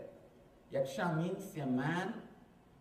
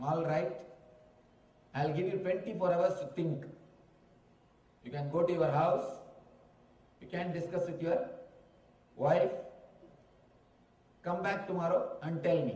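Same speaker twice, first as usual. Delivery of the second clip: ordinary delivery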